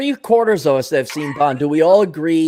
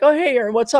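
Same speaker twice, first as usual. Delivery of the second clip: play-acted bright, wide-awake, chipper, very high; 10 semitones higher than usual. Retelling an early phone call, the speaker imitates TJ answering, put-on chipper. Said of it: "He's all chipper and awake".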